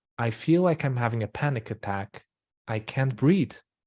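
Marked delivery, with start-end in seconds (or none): none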